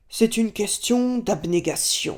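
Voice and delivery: big, rough, rasping, heavy, gravelly voice. Recounting asking a man about keeping faith, quoting his answer in a big gravelly voice. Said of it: "il a une grosse voix rocailleuse et il dit".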